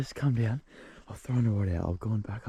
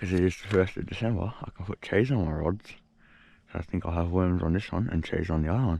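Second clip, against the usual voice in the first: words distorted, spoken around something in the mouth; 3 semitones lower than usual. Speaker setting up fishing rods, talking with a light in the mouth. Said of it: "I've got a light in my mouth".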